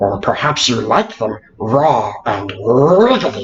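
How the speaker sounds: small fantasy-creature voice, dropped low. Narrating to Rishi, who caught a fish, in a little Smeagol impression. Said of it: "my little Smeagol impression".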